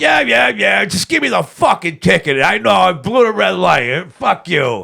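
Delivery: put-on high, rough, drunken screaming. Retelling a traffic stop, imitating screaming at the cop. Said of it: "I was screaming at the cop".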